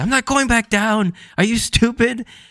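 very high-pitched, irate, furious zombie screech. Retelling a zombie popping back out of its grave, retelling its yell. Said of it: "pops right back out and yells at Luffy".

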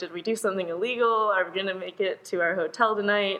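normal talking voice

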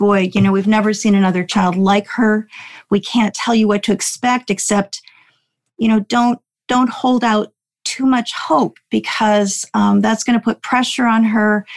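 ordinary delivery

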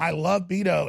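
fake crying, words sobbed out. Retelling fake crying at a mural in front of a woman: retelling fake crying. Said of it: "I began fake crying and saying".

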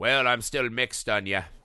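put-on voice spoken in a Scottish accent. Quoting the sheriff's line from the film end: imitating the sheriff in a Scottish accent. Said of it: "He's not Scottish in the movie. I don't know why I did that".

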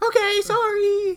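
put-on very high, slow, whimpering crying child voice. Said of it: "then he's like".

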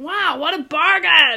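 very loud, drawn-out, bad fake Australian accent. Retelling how Sophie reacted when told the total, in her bad Australian accent. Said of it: "in our Australian accent".

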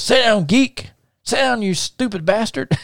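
put-on very high, yelled holler in a country accent. Retelling what Buck yelled at someone, in Buck's yelled country accent. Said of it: "in his country voice, he said, I'm going to try to imitate him".

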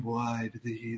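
very quiet, soft, low, hushed, breathy tone. Describing a man's delivery in his video, the speaker copies it: low, soft, breathy imitation. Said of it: "It's just that lower tone, a little bit softer".

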